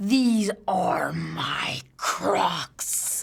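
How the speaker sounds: put-on, mock-serious grandma voice. Recounting a funny video where a kid questions his grandma: mock-serious grandma reply.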